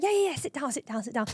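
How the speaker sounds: acted excited insistence. Retelling how he urged the speaker to sit while opening his email card; mock-excited urging. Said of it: "he was all excited".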